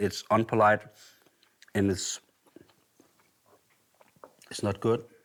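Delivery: muffled speech through a mouthful of food, chewing. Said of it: "I'm speaking with a mouthful".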